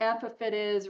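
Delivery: ordinary talk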